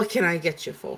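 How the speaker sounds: put-on Greek-accented serving woman voice, barmaid style. Voicing a server coming over to take an order: Greek accent. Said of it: "Greek voice".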